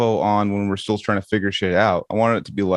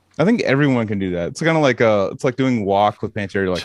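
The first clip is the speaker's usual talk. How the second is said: ordinary talk, nothing marked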